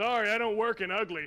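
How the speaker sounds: gruff, rude, surly blacksmith voice. Voicing a blacksmith who looks over at a customer: gruff rude blacksmith voice. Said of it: "he looks over at you and is like".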